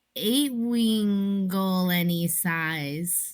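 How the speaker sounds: slow, languid. Repeating the game phrase as directed by another player, slow and languid. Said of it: "say it like more languid".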